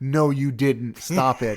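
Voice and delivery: play-acted, exasperated, fed-up yelling. Speaker recalls reacting through a whole movie, reenacting screaming at the screen. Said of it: "just screaming".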